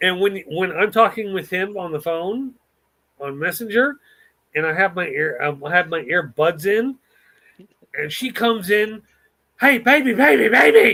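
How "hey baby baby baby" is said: very loud, rough, shrill screeching scream. Retelling how a wife calls out during a phone call: imitating a wife screaming. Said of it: "she is screaming into his microphone".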